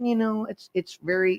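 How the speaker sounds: whiny little put-on voice, drawn out slowly. Imitating Bill Gates while discussing aid money: whiny Bill Gates voice. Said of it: "I'm trying to do his voice".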